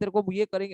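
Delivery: ordinary talk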